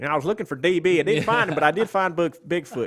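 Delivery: loud, put-on Southern drawl. Joking as a searcher who found Bigfoot: put-on Southern accent. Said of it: "Why do I do Southern accents for everyone?".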